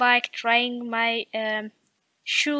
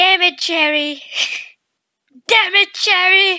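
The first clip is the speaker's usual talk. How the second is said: very loud, high-pitched repeated shouting; 8 semitones higher, 8 dB louder than usual. He shouts after being told no about taking the medicine: shouting. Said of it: "Why are you shouting at me like that?".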